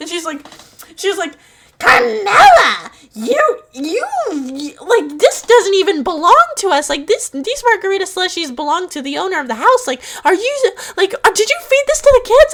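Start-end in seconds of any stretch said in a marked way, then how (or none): 1.8-12.5 mock yelling, higher and louder. Retelling how a kid's mom scolded her at nine: imitating a mom yelling. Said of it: "Just yelling at me and chewing me out".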